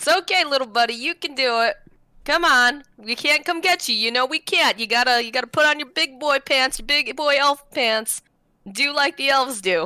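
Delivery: reassuring, coaxing, encouraging cheer-on tone. Yelling up encouragement to a scared party member: yelling encouragement. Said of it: "I'm gonna yell encouraging things to him".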